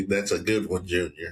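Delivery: ordinary talk, nothing marked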